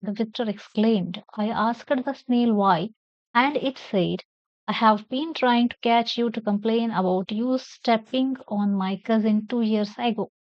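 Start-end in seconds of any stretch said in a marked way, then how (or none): none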